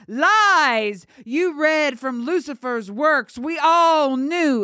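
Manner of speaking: high, furious shout, with a stretched-out "Lies". Narrator reading a priest's line to a girl, angry shouting. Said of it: "the priest shouted to her, anger overcoming his fear".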